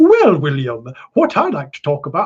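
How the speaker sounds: full-on, sing-song telephone voice. Retelling how his mum talked when they sat down, full telephone voice. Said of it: "she went full telephone voice".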